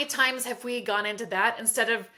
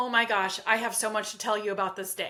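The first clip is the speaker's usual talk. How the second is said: put-on eager, excited dog voice. Voicing the speaker's dog on the couch after they come home, voicing an excited dog. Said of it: "And he's just so excited".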